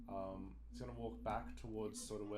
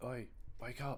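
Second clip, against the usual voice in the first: casual, low-key, easy calling voice; 3 semitones higher, 4 dB louder than usual. Player character knocking on companions' door to wake them, in a somewhat quiet tone. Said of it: "but just sort of in a somewhat quiet tone".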